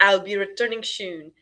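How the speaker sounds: ordinary delivery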